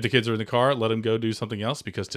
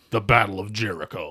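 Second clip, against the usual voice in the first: wrestling ring announcer style voice. Podcast host introducing a story title, in a WWE announcer voice. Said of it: "I want to use like a like a W W E voice".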